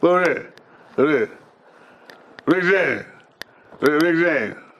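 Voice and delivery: high voice, words squeezed through clenched teeth. Retelling a story, doing Charlie calling out for someone, Charlie impression through clenched teeth. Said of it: "his teeth is locked together".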